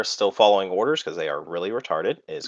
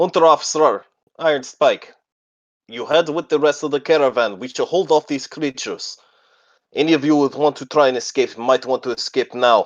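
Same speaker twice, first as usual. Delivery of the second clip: loud, high-pitched, shouted voice; 6 semitones higher, 6 dB louder than usual. Narrating a story, voicing a character on his turn: shouting orders. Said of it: "you hear him shout out orders".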